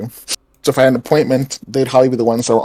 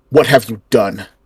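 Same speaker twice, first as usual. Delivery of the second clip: most commanding, deep, authoritative guard voice. Playing a guard confronting someone, deep, authoritative guard voice. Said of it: "in my deepest, most authoritative voice".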